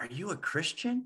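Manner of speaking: imitated quiet hushed talk. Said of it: "real kind of quiet, hush, hush".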